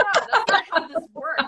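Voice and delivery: high laughing retort.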